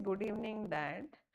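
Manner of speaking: ordinary delivery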